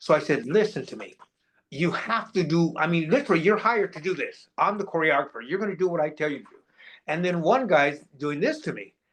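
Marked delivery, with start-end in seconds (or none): 0.5-6.6 mock-angry, put-on pissed-off scolding. A choreographer retells lecturing dancers who ignored his directions, retelling angry outburst. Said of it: "Now I'm getting pissed".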